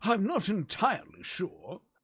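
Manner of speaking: drawn-out, swooping wizard voice. Speaker announces a bit, then talks in the Ultima IX wizard voice. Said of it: "in the voice of the wizard from uh oh Ultima nine".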